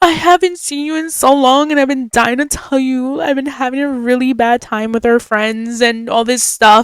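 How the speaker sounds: crying, sobbing, tearful outpouring. Retelling what a friend said while she was sobbing: imitating someone sobbing. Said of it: "she starts sobbing, crying".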